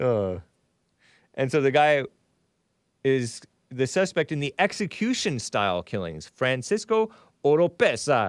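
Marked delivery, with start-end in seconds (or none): 6.3-8.3 put-on Italian accent. Reading out a suspect's name from a news story: put-on Italian pronunciation. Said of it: "I made it sound Italian".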